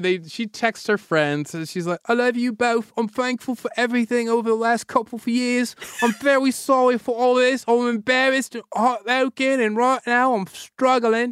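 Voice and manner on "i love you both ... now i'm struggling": heavy fake British accent, pitched higher. Quoting a woman's apology text to her friends: Jamie Tartt accent. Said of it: "So then she became Jamie Tart".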